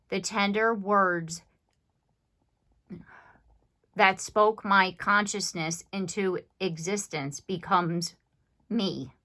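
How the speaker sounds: heartfelt, moved, emotion creeping into the voice. Speaking a passage before stopping to apologize: getting a little emotional. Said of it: "I got a little emotional there".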